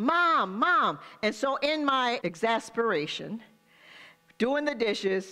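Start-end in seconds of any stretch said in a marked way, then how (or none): 0.0-1.0 put-on small child's voice calling, drawn out. A mother retelling a child calling her while she washed dishes, imitating a small child's voice. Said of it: "I heard this little voice behind me".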